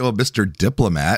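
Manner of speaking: ordinary talk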